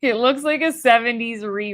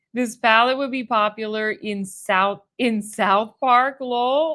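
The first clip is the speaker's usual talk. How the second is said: plain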